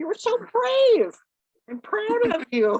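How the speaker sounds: shocked, very high and swooping tone. Praising the group for doing a good job, sounding shocked. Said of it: "You sound so shocked".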